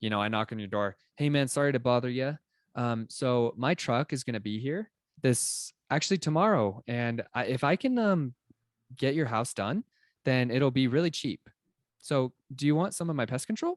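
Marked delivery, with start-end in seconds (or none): 1.1-13.8 put-on childish, halting, unsure little-kid voice. Showing a pest control pitch at a door: imitating an unsure little kid. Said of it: "I sound like a freaking little kid".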